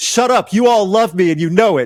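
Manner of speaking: mock wrestling villain screaming, high-pitched. Retelling a wrestling heel persona's line to the crowd: imitating a heel's screamed taunt. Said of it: "Screaming that at children".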